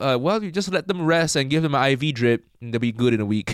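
ordinary talk

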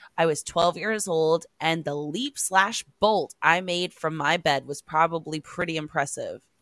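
ordinary talk

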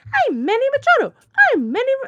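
squeaky cartoon mouse voice. Speaker pictures a ballplayer skipping around the infield throwing balls: Mighty Mouse voice. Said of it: "Mighty Mouse voice".

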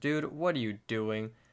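normal talking voice

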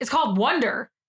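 put-on, fed-up, exasperated screaming. Retelling what the speaker screamed at a man, retelling a scream. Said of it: "I screamed at him".

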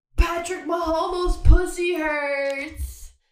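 very loud, very high, slow, drawn-out screaming. Retelling a guy running down the street: imitating him screaming.

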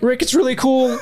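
very high cartoon voice, pitch pushed way up. Joining in after praising the Morty voice, addressing Rick; Morty voice. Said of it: "I like how you did that in the Morty voice".

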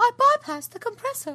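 put-on British accent, pitched very high. Imagining what Rey will say once she finds him, in Rey's British accent. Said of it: "can't wait to hear her British accent".

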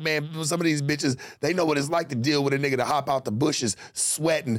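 usual speaking voice

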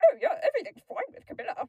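very high, very loud frog puppet voice. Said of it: "her Johnny impression sounded just like Kermit".

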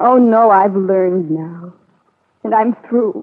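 weeping, tearful voice, through tears. Talking about someone who changed his mind: crying. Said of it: "Why are you crying?".

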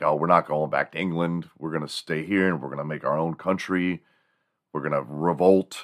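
normal talking voice

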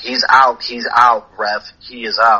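ordinary delivery

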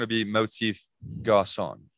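English accent and pronunciation. Showing how the band name sounds said with an English accent. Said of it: "In an English accent".

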